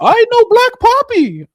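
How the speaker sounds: high, put-on cartoon mouse voice impression. Doing a viewer-requested line for everyone: Mickey Mouse voice. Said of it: "Mickey voice".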